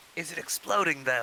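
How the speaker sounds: hushed whispering voice. Asking another player a question in character: whispering. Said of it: "I'm whispering, I'm asking Marta".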